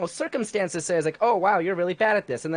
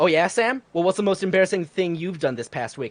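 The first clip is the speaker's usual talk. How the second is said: mock, passive-aggressive tone of voice. Retelling what the assistant manager asked: imitating a passive-aggressive tone. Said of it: "he talks very passive-aggressively".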